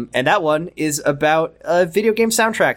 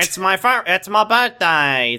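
mocking Australian accent, higher; 3 semitones higher than usual. Imitating how the other speaker just sounded, in an australian accent. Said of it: "That's how you sound".

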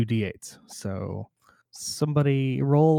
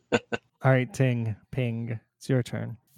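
ordinary delivery

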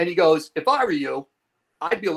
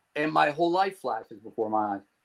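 ordinary delivery

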